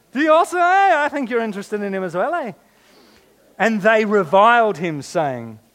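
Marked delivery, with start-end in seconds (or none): 0.1-2.5 put-on Irish accent with raised pitch. Reading a passage aloud, voicing a questioner in an Irish accent. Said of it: "you need the Irish accent".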